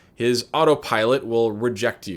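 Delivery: ordinary delivery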